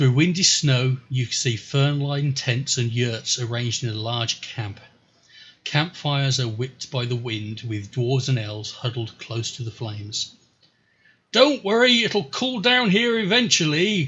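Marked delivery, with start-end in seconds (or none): 11.3-14.1 very high, joking holler. A storyteller voices someone calling across a snowy camp, joking bellow. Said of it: "a joking voice bellows over the snow".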